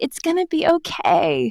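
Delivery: mock pitying reassuring tone. Retelling how a stranger said "you're doing great": imitating pitying reassurance. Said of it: "this stranger is like".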